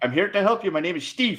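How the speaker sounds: exaggerated put-on Indian accent. Speaking English to a woman, put-on Seven Eleven accent. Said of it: "you put on the Seven Eleven accent".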